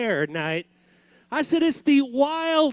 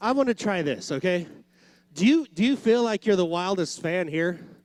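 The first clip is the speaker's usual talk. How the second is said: ordinary talk, nothing marked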